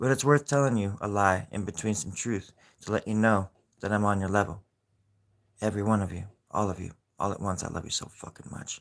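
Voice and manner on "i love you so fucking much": rough, gruff, breathy whispered growl. Telling everyone all at once how much they are loved: gruff. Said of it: "but not so gruffly odd".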